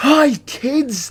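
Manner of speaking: put-on very high-pitched, creepy kids' TV host voice. Inventing a new character and greeting kids in a creepy child presenter voice. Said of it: "Creepy child presenter".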